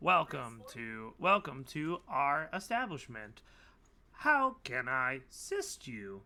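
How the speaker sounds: slow, sing-song robot voice. Voicing an android who greets the players at a bar: voicing an android bartender. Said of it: "the android comes up to you, and he's like".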